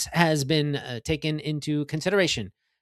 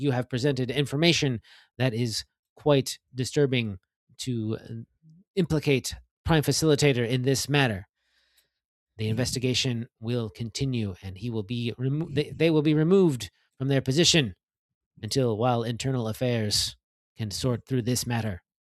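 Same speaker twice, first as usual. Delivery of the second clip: echoing, flat, emotionless electronic monotone; 3 semitones lower than usual. In a tabletop game scene, voicing an announcement in an emotionless electronic voice. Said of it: "a purely emotionless electronic voice sort of echoing".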